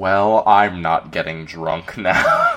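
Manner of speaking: deflated, very slow, swooping disappointed delivery. Retelling someone's reaction to a ten-dollar mimosa: imitating a disappointed remark. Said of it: "so disappointed".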